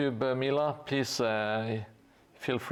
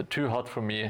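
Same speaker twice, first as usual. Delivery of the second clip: ordinary delivery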